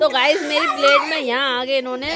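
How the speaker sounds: laughing through the words.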